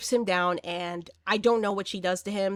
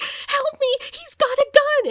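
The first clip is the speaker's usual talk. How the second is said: put-on crying, pleading voice, higher and louder; 8 dB louder than usual. Retelling a movie scene where a woman begs a neighbor: imitating someone crying. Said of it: "she just immediately starts crying".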